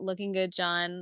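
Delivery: plain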